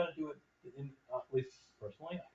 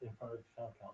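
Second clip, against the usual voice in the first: soft, barely audible mumbling. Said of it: "Steve, you're mumbling".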